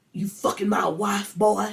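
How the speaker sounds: put-on furious scream. Recapping a scene where a man confronts a younger man, retelling a furious scream. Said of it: "James is screaming at them".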